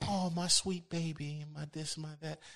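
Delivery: gentle, honeyed, soft-toned slow cooing. Imitating people who speak with soft tones: imitating soft-toned speech. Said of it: "people who speak with soft tones".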